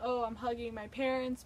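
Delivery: ordinary talk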